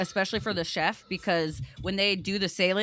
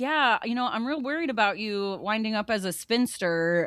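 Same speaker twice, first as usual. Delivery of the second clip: mock teasing, sarcastic joking tone; 2 semitones higher than usual. Retelling a character's joking line: imitating a sarcastic remark. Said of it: "they're totally being sarcastic".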